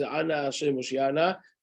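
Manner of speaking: ordinary talk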